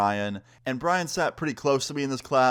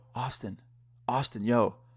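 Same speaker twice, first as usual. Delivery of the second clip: put-on whispering; 3 dB quieter than usual. Retelling how a classmate called over during a quiz: imitating someone whispering. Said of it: "he's whispering at me from across the table".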